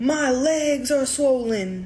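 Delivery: repeated scream, crying out in agony. Retelling what a patient said coming into the ER, imitating her screaming. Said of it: "She keeps screaming over and over again".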